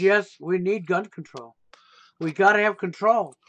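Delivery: dry, overboard, acted-out sarcastic delivery. Retelling own sarcastic video about gun control: retelling own sarcastic line. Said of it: "I did a sarcastic video".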